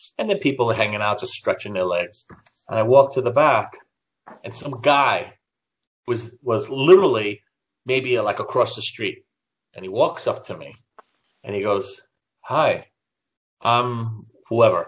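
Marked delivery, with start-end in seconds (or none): 12.4-14.9 put-on German accent on English, halting. Retelling how a fan walked up and introduced himself: imitating a broken German accent. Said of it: "with a broken, you know, broken, uh, German".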